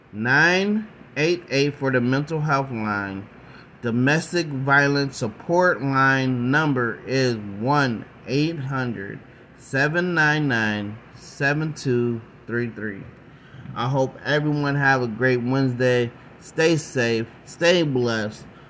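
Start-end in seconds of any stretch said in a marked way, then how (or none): 0.2-13.1 careful, measured, slow and deliberate delivery. Repeating hotline numbers for listeners one more time, slow and deliberate. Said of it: "I'm going to say it slowly one more time".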